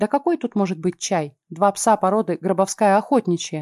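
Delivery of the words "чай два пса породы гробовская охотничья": plain reading voice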